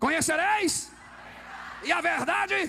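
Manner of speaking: shouted loudly. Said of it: "Eu vou gritar".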